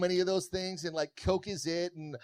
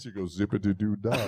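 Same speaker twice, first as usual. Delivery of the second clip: real sexy, seductive delivery, much lower; 10 semitones lower than usual. Explaining what you say in her ear, in a real sexy voice. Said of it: "you say in her ear real sexy".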